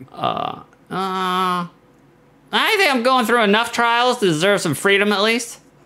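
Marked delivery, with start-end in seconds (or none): 2.5-5.6 high, snarky, sarcastic put-on woman's voice. Retelling what a woman said, in a put-on voice for her. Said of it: "what voice were you doing for her?".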